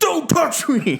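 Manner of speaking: furious, very high-pitched outburst. Retelling a scene where someone touches a meditating man, acting out being pissed. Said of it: "He's like super pissed about it".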